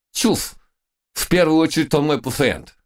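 stern, strict, very high-pitched loud shout. The head doctor answers the visitors who came to take his patient, sternly shouting. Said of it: "строго прикрикнул главный врач".

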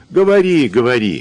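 scoffing, teasing tone. A man mockingly interrupts a woman making excuses for her daughter. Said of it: "насмешливо перебил Иван".

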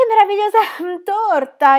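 abrupt outburst, very high pitch and very loud. An elderly lady cuts into another woman's talk, hastily interrupting. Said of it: "Interruppe frettolosamente la signora anziana".

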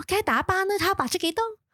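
very high-pitched, gushing mock commercial voice. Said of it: "跟住就係Sammy".

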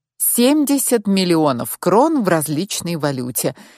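ordinary delivery

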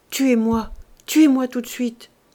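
faltering, stammering, stuttering. A woman lying in bed answers the doctor, stammering. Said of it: "Alors elle balbutia".

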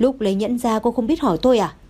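plain reading voice

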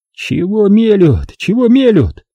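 offended grumble, high pitch and slow. A wounded soldier mutters at what the others are saying: offended muttering. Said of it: "обиженно бормотал Боровков".

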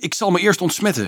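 high, called-out cry. A man, about to run to the river, tells the others his plan, called out. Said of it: "riep hij".

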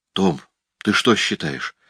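ordinary talk

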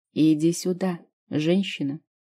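ordinary talk

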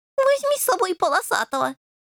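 snide, mocking, very high, swooping sarcastic sneer. Answering a companion who needs cats, the speaker retorts with a sarcastic snort. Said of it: "язвительно фыркнул Рыжий".

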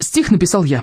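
usual speaking voice

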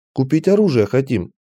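ordinary delivery

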